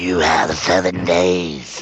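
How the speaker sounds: low, very slow, drawn-out horror-style delivery. Doing an impersonation from The Ring for another speaker: imitating The Ring's "seven days" voice. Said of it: "here's my impersonation of you and the Treble Shuffle in seven days".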